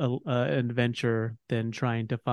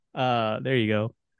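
plain

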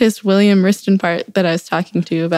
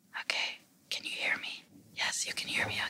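hushed, breathy, quiet whisper. Demonstrating whisper volume with a decibel meter app, whispering. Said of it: "so let's say I am whispering".

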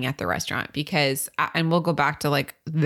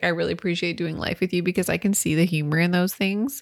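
ordinary talk

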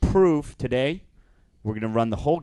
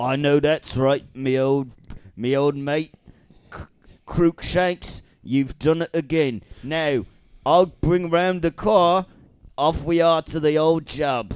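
put-on London cockney accent; 4 semitones higher, 3 dB louder than usual. Speaking in character, addressing Crookshanks: London cockney accent. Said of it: "london cockney".

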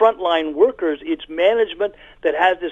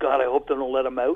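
mock hushed, much quieter, lower voice; 5 semitones lower, 5 dB quieter than usual. Recounting a parole officer's aside during a board break, imitating a lowered voice. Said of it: "lowers her voice".

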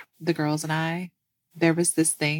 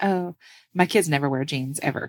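ordinary talk

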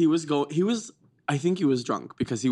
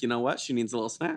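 usual speaking voice

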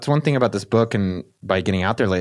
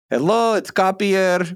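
put-on pitched-up Israeli accent; 9 semitones higher than usual. Recalling a recorded part about the speaker's dad, imitating Kapir's Israeli accent. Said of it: "about my dad's accent".

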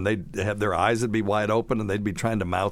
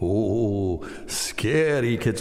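fake Eastern European accent, stretched long "oh". Recalling an SCTV horror-host bit, doing the Count Floyd fake accent. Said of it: "that typical Eastern European fake accent".

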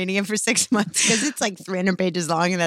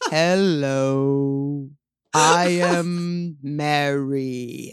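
very slow, low, sluggish, stretched-out plodding speech; 5 semitones lower than usual. Complaining that people on TV talk slowly, mimicking them, imitating slow talking. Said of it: "why are they talking so slow?".

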